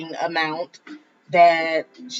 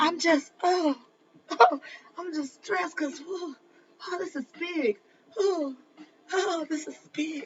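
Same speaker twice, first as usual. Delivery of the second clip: mock hushed, pitched-up talk broken by panting breaths; 11 semitones higher, 6 dB quieter than usual. Retelling what a man on a live stream said, imitating heavy breathing while talking. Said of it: "just breathing hard".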